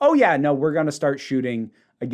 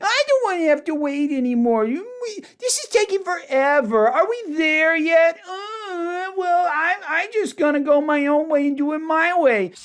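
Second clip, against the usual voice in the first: mocking, bratty, childish whine, very high. Mocking Bill to his face for acting like a child, mocking Bill's childish voice. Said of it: "I try not to do mocking voices for anybody these days".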